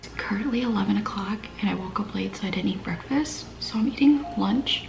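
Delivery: soft, unvoiced whisper.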